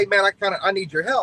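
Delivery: put-on yelling. Retelling a driver calling over the radio at night: imitating someone yelling. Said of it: "he kinda yelled at me".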